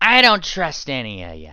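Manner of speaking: loud, swooping, suspicious, distrustful pony voice. Voicing a pink mare who speaks up from the other side: distrustful pink mare voice. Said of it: "The voice of a certain pink mare".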